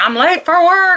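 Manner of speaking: put-on shrill scream, very high pitch. Retelling the son rushing off late for work: imitating son screaming. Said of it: "and he's screaming and running around".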